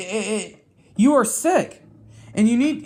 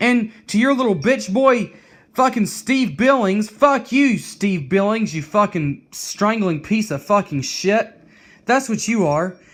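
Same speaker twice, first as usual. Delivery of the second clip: furious, enraged, worked-up, boiling-over tirade. Ranting at a content creator whose fans are leaving, angry, getting pissed off. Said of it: "And I'm getting pissed off".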